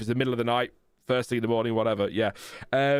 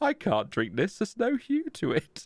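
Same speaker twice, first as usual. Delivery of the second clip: crestfallen put-on British accent, swooping high; 9 semitones higher than usual. Co-host echoes the other's complaint about a cup of tea; mock-disappointed British voice. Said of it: "The disappointment in your British voice".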